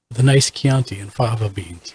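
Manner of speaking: whispered speech. Saying a line in character into the room: whispering. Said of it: "did you just whisper that into the room".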